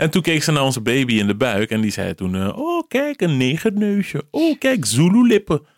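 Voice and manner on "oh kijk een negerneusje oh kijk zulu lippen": put-on Surinamese accent. Act out the sonographer looking at the speaker's baby in the belly, in a Surinamese accent. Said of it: "gewoon echt zo'n Surinaams accent".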